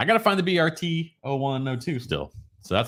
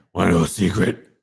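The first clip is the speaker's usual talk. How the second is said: gruff superhero voice, louder; 4 semitones lower, 5 dB louder than usual. Setting up a secret for the listener, in a Batman voice. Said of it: "I'll go in Batman voice".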